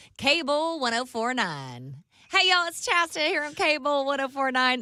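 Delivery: thick country accent. Redoing an old country radio station intro on request: thick country accent. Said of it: "'Cause I had such a thick accent".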